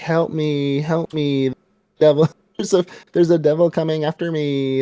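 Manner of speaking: sly, sneaky, high-pitched put-on voice. Retelling a scene where Reze fakes a plea for help: sneaky fake plea. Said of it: "trying to be all s-, sneaky".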